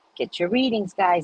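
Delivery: polished professional voice. Retelling something Lamar said while working: imitating Lamar's professional voice. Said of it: "he has this voice, ... when he's in his professionalism".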